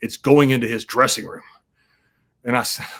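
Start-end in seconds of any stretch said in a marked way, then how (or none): 0.0-1.4 put-on baritone voice. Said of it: "I hear that baritone voice".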